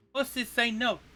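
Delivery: put-on high little girl voice. A game narrator voices Juliet looking at both players, in a little girl's voice. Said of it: "in uh, what appears to be a little girl's voice".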